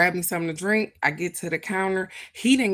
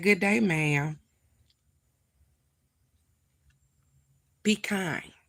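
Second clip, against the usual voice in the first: put-on voice that sounds like a little kid. Retelling a man's greeting to the speaker, imitating a childlike voice. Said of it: "his voice went from what I heard".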